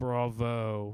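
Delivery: dry, flat, monotone delivery. A seated character reacts to a magic trick, dry monotone. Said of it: "in a very dry and monotone voice".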